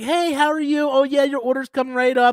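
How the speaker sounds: mock sweet customer-service voice. Retelling how the cashier greeted customers: imitating a nice cashier. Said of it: "she was so nice".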